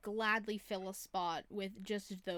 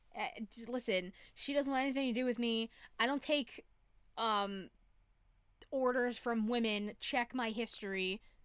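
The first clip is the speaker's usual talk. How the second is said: ordinary talk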